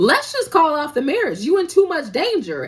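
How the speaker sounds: acted high, loud shrieking meltdown scream. Retelling a drama scene where a friend has a meltdown: imitating a scream. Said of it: "she screams".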